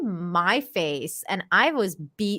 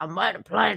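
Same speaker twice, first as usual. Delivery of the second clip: put-on pirate voice. Imitating a woman in a clip as Jack Sparrow: Jack Sparrow voice. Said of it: "her Jack Sparrow?".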